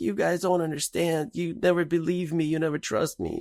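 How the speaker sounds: high-pitched bawling and yelling. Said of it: "she's just bawling, and she's yelling".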